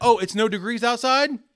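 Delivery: loud, high-pitched sarcastic griping.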